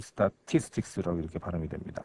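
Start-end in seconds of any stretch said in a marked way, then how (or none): 0.0-1.2 "statistics" with stress on the second syllable. Explaining English word stress: stress on second syllable of statistics. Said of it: "티아이에스 중에 I에 그 I에 소위 스트레스가 붙어 있습니다".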